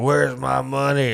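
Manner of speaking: put-on drunk man voice. Retelling the drunk guy's line after he comes to: imitating a drunk man. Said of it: "drunk. He's like".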